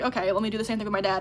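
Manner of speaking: ordinary talk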